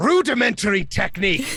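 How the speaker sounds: high yelling, all at once. Narrating a character slamming down his staff to cancel a spell: yelling. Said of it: "He just yells out".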